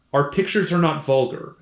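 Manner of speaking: ordinary talk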